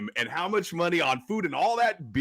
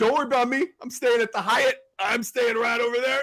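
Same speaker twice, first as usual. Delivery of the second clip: put-on drunk voice, pitched much higher; 8 semitones higher than usual. Recounting a drunk man at a football game answering people, imitating a drunk guy. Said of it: "the guy was really drunk".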